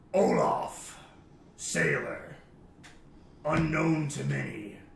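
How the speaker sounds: grand, big, deep announcing voice. Describing what plays when the emojis light up, in a big deep booming voice. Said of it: "a big, deep voice just booms".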